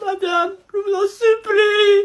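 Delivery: tearful, sobbing pleading. A pupil begs his teacher not to tell his mother, crying while pleading. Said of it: "J'ai jamais vu un élève pleurer comme ça".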